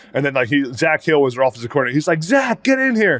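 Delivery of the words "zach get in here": very high-pitched yell. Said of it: "yelling at the coaches".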